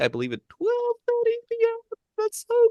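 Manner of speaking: high-pitched squeaky voice. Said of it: "Let's say it in a high-pitched voice".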